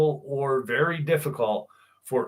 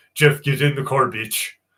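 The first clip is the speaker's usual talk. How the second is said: put-on Czechoslovakian accent; 5 dB louder than usual. Retelling what Martin said to Jeff, in an Arnold Schwarzenegger accent. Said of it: "in his Czechoslovakian Arnold Schwarzenegger fucking accent".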